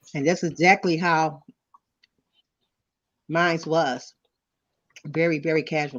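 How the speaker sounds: speaking with mouth full while chewing. Discussing keeping it casual with opposite-sex friends, the speaker talks with mouth full. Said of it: "I'm sorry, I was eating candy".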